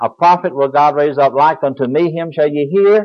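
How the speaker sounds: normal talking voice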